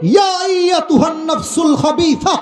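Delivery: high, slow, drawn-out shout.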